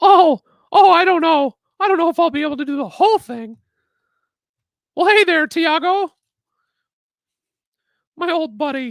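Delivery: classic friendly high cartoon mouse character voice. Greeting a viewer after being asked to talk in Mickey's voice: Mickey Mouse voice. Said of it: "you should do the entire stream in Mickey's voice".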